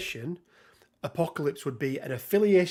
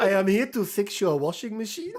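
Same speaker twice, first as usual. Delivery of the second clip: fake German accent, higher; 5 semitones higher than usual. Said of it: "You would have to put on the German".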